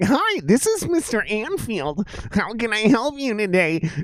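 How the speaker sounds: put-on nerdy, meek voice.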